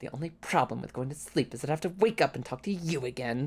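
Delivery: haughty, snooty, put-upon wizard tone. Imitating a friend's tabletop character who complains about everything: imitating Boy's snooty mage. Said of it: "a snooty mage character".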